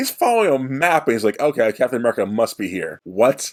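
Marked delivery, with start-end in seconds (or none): none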